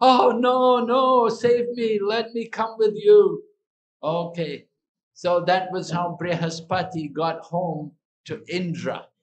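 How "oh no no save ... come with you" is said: shrieked, high, loud screaming. Retelling how Indra screamed when the butcher came: imitating Indra screaming. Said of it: "So Indra was screaming".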